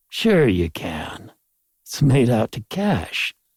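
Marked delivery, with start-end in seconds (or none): none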